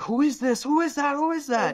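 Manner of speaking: shrill, very high, excited shrieking. Retelling a crowd at a resort pointing phones: imitating people screaming.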